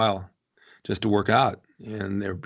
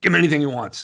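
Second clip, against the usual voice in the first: gruff, rough, loud growling voice; 6 semitones higher, 5 dB louder than usual. Retelling a doctor's answer to the pharmacy on the phone, use Dr. Schwartz's real rough voice. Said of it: "he had a real rough voice like this".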